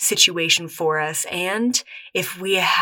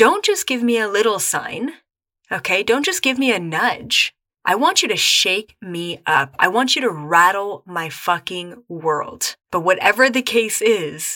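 ordinary delivery

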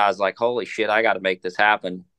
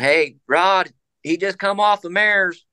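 mock shouting, pitched very high; 9 semitones higher, 3 dB louder than usual. Retelling a man yelling to the cameraman as a horse is unloaded: retelling a yelled warning. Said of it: "and he's yelling".

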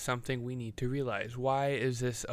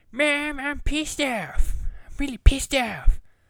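loud, high-pitched cartoon voice; 7 dB louder than usual. Ranting, then dropping in a quoted sound bit: Eric Cartman voice. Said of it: "insert a Eric Cartman sound bit here".

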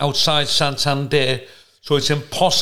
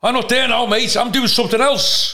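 put-on high, raised shouting; 8 semitones higher than usual. Retelling how a post office worker answered the waiting speaker: imitating a worker shouting. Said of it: "Just started shouting".

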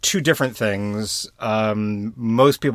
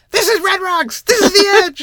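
put-on high falsetto voice; 7 dB louder than usual. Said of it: "just in this kind of falsetto".

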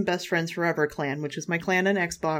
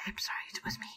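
very quiet, breathy, barely-there whisper; 2 semitones higher, 15 dB quieter than usual. Retelling how a raider owned up after the speaker yelled at everyone, real quiet. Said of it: "Just real quiet".

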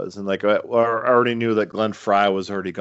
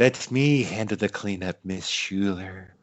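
put-on creepy character voice, quieter; 5 dB quieter than usual. Imagining Peter Lorre cast as the character: Peter Lorre voice. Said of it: "is he doing that voice?".

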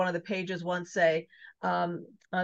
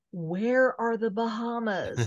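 whispered; 3 semitones higher than usual. Retelling a game show win, re-enacting her own whisper. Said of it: "and I whispered in his ear".

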